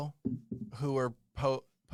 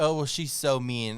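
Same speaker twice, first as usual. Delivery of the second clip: ordinary talk, nothing marked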